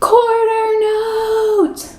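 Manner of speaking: big, loud, very high voice, note stretched out. Rhythm lesson leader saying the note name as asked, in a loud voice. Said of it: "Could you say it in a loud voice?".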